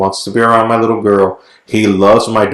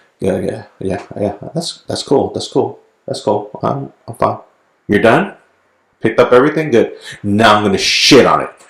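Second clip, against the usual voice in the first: put-on cat voice, thoughts spoken aloud. Retelling how the cat watches the litter being cleaned, voicing the cat's thoughts. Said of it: "examines me like".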